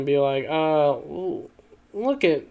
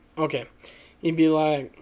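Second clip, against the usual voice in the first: ordinary talk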